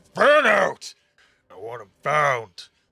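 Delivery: booming, very loud shout. A game master voices someone ordering a search of the market, loud booming voice. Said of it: "You would hear uh the loud booming voice".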